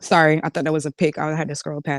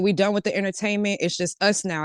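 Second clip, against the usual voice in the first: usual speaking voice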